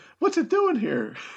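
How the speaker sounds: very high, put-on falsetto girl's voice. Doing a scene that needs a girl's part, falsetto girl voice. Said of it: "Just use your falsetto voice".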